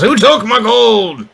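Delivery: loud, drawn-out, high-pitched shouted yell. The narrator voices a character who yells as he goes back out. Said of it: "and he yells".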